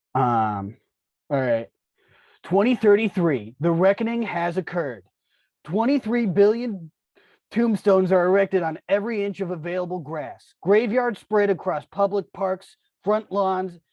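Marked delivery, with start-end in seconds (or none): 2.4-13.7 fast cool-dude reading. Taking a turn at a group reading, speaker reads the passage like a cool dude. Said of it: "read this like a, a cool dude".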